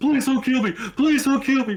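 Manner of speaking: high, loud, mock panicked cry.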